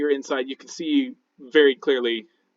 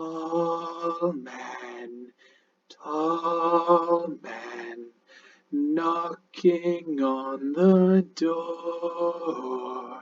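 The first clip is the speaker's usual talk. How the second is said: very faint, very scratchy voice, higher; 4 semitones higher than usual. Voicing an unseen figure heard around the corner: very faint, very scratchy voice. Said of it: "a very faint, but a very, very scratchy voice".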